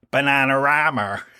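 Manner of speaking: Bristolian accent. Demonstrate how Bristolians would say the name, in a Bristolian accent. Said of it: "How would Bristolians say it?".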